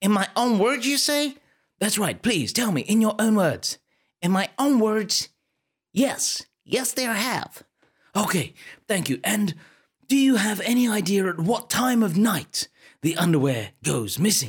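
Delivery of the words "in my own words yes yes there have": a best-effort attempted American accent. A hotel receptionist answers questions, in an attempted American accent. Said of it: "I'm the receptionist of this hotel. ... and I noticed that you almost have an American accent. Yeah, that's right, honey. I'll be honest with you. This is absolutely the best attempt at an American accent you are going to get on this podcast today".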